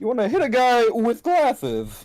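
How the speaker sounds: high, swooping, sing-song cartoon king voice. Thanked for an earlier impression, the speaker does another line in King Candy voice. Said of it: "your impression of King Candy".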